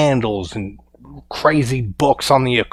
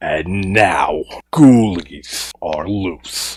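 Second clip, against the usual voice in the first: low, spooky, ominous horror-movie narration voice; 6 semitones lower than usual. Recapping a story's plot to listeners, the speaker switches into a horror voice. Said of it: "that's my horror voice".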